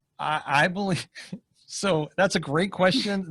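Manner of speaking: words broken up by laughing throughout. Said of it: "I'm sorry, I'm laughing".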